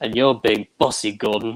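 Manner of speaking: put-on English-sounding British accent. Trying a John Bellis impression, line to Gordon: John Bellis impression, British accent. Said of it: "I want to try to do a John Bellis impression".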